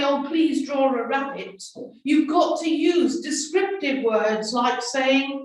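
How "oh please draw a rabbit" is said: ordinary talk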